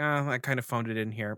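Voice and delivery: ordinary delivery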